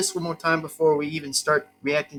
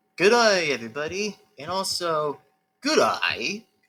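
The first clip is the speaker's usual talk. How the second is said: put-on Australian accent. Opening a reaction video, the host greets everybody: Australian accent. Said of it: "also in an Australian accent".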